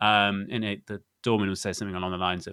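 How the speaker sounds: ordinary delivery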